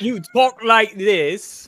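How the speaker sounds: very high, loud, shrill, booming put-on English accent. Friends arguing about accents; one demonstrates a put-on english accent. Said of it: "That's an English accent".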